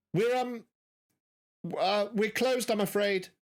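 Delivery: put-on young-sounding, youthful voice. Voicing a person inside a closed shop: young-sounding voice. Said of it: "quite a young sounding voice sort of say".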